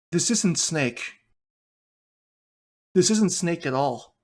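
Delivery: play-acted dry, dejected, deadpan, sad delivery. Recalling what he said, leaning over to you while watching snake, retelling a deadpan, sad remark. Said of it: "saying with like like both a deadpan and sad inflection in his voice".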